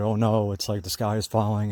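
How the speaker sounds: normal talking voice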